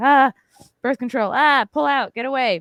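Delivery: high, loud, paranoid panic.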